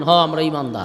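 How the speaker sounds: fast, firm, clipped speech. Showing the audience how believers should answer: said like a bullet. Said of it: "বুলেটের মতো বলবেন".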